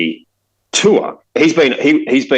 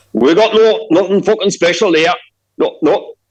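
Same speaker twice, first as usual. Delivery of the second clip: put-on muddled Scottish or Irish accent, pitched up; 7 semitones higher than usual. Retelling what the Serbian coffee shop owner said, in a Scottish-or-Irish-sounding accent. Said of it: "his accents kind of become Scottish or Irish when I do it".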